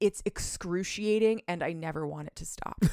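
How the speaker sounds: ordinary talk, nothing marked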